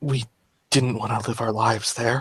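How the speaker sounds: barely-there, soft, hushed half-whisper. Narrating a game, voicing Gareth's reply to an accusation, half-whispering. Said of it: "Gareth just kind of whispers".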